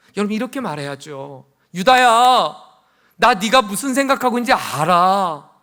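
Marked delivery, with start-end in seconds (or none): 1.8-5.4 loud, high-pitched pretend scolding. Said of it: "이렇게 다그쳐야죠".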